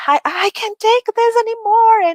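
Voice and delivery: very high, loud scream that keeps rising. Retelling the story of Job crying out in pain: imitating Job screaming. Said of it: "then he's just screaming".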